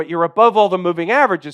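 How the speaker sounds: fast, rattled off all in one breath.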